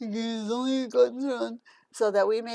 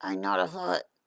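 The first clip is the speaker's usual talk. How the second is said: odd, strange, very deep voice. Speaking up after being told they can't be heard, in a weird voice. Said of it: "What's wrong with your voice?".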